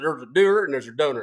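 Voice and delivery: scornful, mocking put-on Southern drawl. Mocking someone's quote by repeating it in a Southern accent. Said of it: "I'm doing the Southern accent because".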